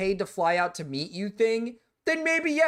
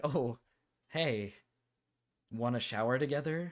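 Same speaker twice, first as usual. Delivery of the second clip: put-on bashful, blushing man voice, much slower; 8 semitones lower, 8 dB quieter than usual. Retelling a scene, speaker acts out a blushing man's offer, mock-bashful. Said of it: "he's like probably blushing".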